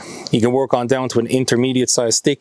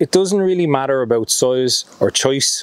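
Irish accent unintentionally creeping in. A speaker giving instructions, slipping into an Irish accent. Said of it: "the Irish accent came out of me there".

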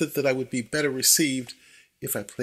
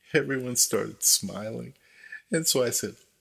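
normal talking voice

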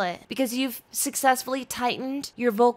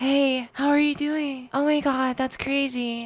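mock badly done put-on female voice. Mocking creators who teach a bad girl voice: imitating shitty rendition of girl voice. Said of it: "this very shitty rendition of a girl, of a female's voice".

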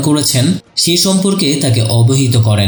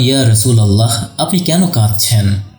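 ordinary delivery

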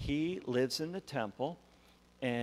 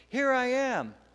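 put-on high, loud boyish voice. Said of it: "and he says".

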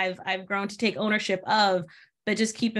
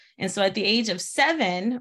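normal talking voice

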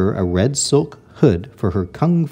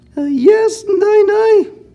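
fake, high-pitched character voice; 4 dB louder than usual. Narrator reads Dragon answering Nai Nai through her door, high-pitched voice. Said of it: "said Dragon in a high-pitched voice".

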